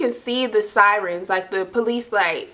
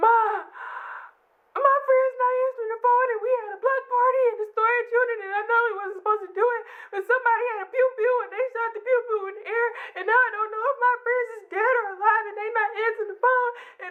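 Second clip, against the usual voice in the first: put-on high, shrill, rushed, tearful drunken babble; 13 semitones higher, 4 dB quieter than usual. Retelling a drunk call to her mother: imitating own drunk crying call. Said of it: "when I cry".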